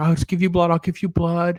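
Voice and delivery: whimpered, begging, pleading voice. Retelling a scene where a character offers blood: imitating someone whimpering.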